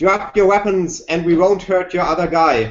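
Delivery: mild, called-out voice. Taking cover in the game, the speaker's character immediately calls out: shouting. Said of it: "I will immediately shout out".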